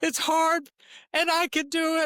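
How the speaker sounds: mock very high, tearful sobbing child voice. A parent retells coaching their son up a tree, imitating son crying. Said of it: "he's crying in tears like".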